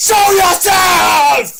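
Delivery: shrieking scream, very high-pitched and very loud. Calling on Big Will to show himself: screaming. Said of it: "When you screamed just now?".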